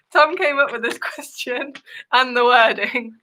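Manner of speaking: talking through laughter. Explaining to another speaker why a quiz question is funny: laughing while talking. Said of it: "You're laughing 'cause of my question".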